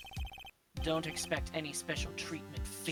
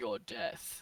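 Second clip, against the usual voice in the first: put-on begrudging executioner voice; 8 semitones lower than usual. Retelling what Edgeworth said on meeting them: imitating Edgeworth, begrudging executioner. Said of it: "he was like".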